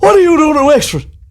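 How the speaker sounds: put-on Wexford accent, pitched way up. Retelling what everyone on a night out asked: imitating a Wexford accent. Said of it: "That's how they sound in, in Wexford".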